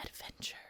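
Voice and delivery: very quiet, hushed whisper. Naming the season's theme word: whispered "Adventure". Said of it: "You have to whisper it like that".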